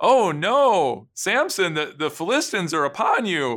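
put-on theatrical alarm, drawn-out "no". Retelling the Samson story, the speaker voices Delilah's line with feigned alarm. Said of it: "Delilah does her best acting job".

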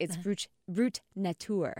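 fancy French pronunciation. Reading a cider's name aloud the fancy way: fancy French pronunciation. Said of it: "if you read it fancy pants".

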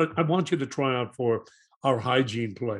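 usual speaking voice

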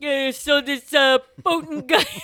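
booming out, high-pitched and slow. Imitating his father breaking down the news, in a Yogi Bear voice. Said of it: "he sounds like Yogi Bear".

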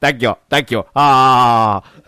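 slow speech with long, drawn-out "ah". Retelling a film scene, imitating Kerim Bey thanking Bond. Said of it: "he's like".

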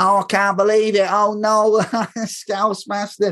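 put-on Manchester accent. Retelling mocking a mate at a match: fake Mancunian accent. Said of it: "I was doing my best, like, fake Mancunian".

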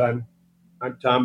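ordinary talk, nothing marked

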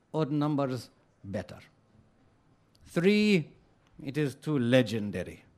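put-on mangled Hungarian accent. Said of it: "apologies for my Hungarian accent".

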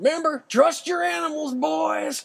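shrill, very high, raspy, rough shout. Retelling a call shouted while riding horses in the dark: imitating Larry screaming out. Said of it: "Larry scream out".

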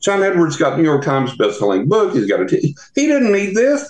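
worked-up, high, swooping yell. Retelling what he yelled at his guys about an interview on TV: retelling a yell. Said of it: "and I'm just yelling at my guys now".

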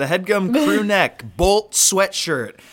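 shouting. Plugging merch while the other speaker's headphones are off: yelling. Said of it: "You really don't have to yell about it".

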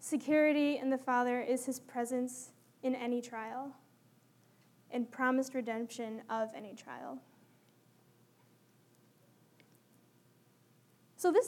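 moved, emotional voice. Giving a talk, getting emotional. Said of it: "i'm getting emotional as i talk about it".

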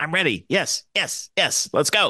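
put-on tiny, squeaky, high, eager kid voice. Retelling a four-year-old's words in a go-kart: Colin's squeaky little voice. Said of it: "you can just hear his little squeaky little voice".

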